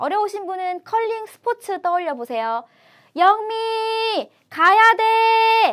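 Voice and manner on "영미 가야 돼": 영미 가야 돼 on one flat, sustained high pitch. Explaining the first tone with a curling call: high, long, level pitch on 영미 가야 돼. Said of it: "그게 일성이에요".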